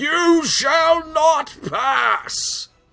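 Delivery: play-acted very high, very slow, drawn-out scream. Describing a fortress that meets anyone who comes: imitating a scream. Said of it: "it's just screaming".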